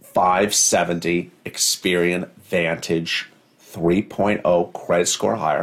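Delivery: slow, drawn-out, deliberate delivery. Repeating what was just said, for listeners to catch: said again slower. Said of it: "I'll say it again slower".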